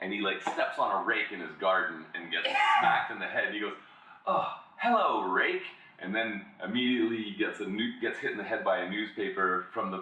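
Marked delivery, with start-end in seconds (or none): 4.3-5.6 unfazed, cheerful, pitched-up tone. Describing an ad about a super positive guy, imitating an overly positive guy. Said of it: "he's just so positive".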